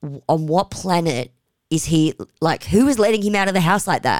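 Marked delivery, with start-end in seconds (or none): none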